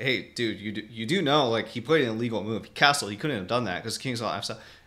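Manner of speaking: plain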